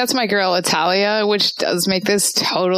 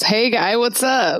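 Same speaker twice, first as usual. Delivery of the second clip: mild yell, hollered as across a room; 3 semitones higher than usual. Playing a character crossing the room and calling out: yelling in character. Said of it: "she yells".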